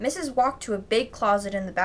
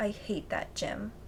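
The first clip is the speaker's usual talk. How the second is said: very soft, hushed, quiet indoor voice; 11 dB quieter than usual. A pupil at school, told by the teacher to keep it down: quiet voice. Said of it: "I said in my quiet voice".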